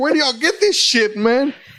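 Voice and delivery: loud outburst. Retelling a remark to the doctor while high on morphine: retelling saying it really loud. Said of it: "I said it really loud".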